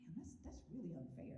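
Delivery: plain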